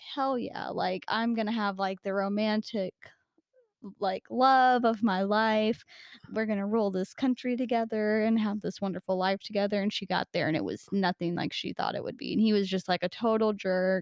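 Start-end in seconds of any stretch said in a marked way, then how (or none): none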